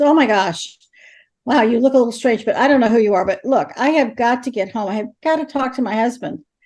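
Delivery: put-on woman's voice, increasingly angry and agitated. Speaker recounting what a woman killed in an accident said to her, imitating an increasingly angry woman. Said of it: "she's becoming increasingly angry".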